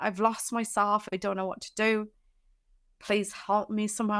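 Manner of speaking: acted, tearful crying voice. Recounting calling someone for help on the phone, retelling a tearful plea. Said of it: "I was crying down the phone".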